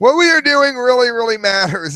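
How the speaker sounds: very high voice, cracking up with laughter midway. Reading a statement aloud, trying once more: can't read it straight. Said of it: "I can't even read it in a straight voice".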